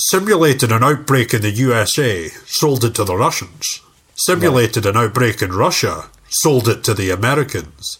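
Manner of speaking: put-on Scottish accent. Retelling the bad guy's movie speech: Sean Connery voice. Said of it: "I'll just do Sean Connery".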